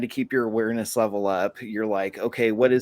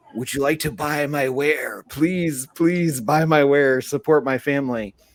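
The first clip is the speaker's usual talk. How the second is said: pleading, begging street vendor voice; 4 semitones higher, 3 dB louder than usual. Retelling how vendors approach tourists: imitating a pleading vendor. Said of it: "vendors that'll come up to you and be like".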